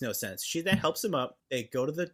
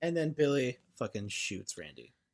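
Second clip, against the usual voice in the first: ordinary delivery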